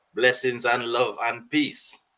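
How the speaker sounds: put-on Trinidadian accent. Answering the host's greeting on the panel: put-on Trinidadian accent. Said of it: "I hope you like my Trini accent".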